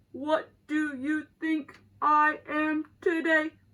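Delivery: loud, flat, slow, mechanical robot voice. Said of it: "And he talks like this".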